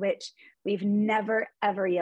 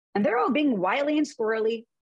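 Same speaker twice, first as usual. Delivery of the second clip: ordinary talk, nothing marked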